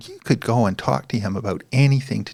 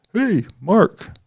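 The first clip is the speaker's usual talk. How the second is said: very high, loud, commanding call-out; 11 semitones higher, 5 dB louder than usual. Retelling how a supervisor called out from his office: imitating the supervisor's voice. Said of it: "that's how his voice sounds in my head".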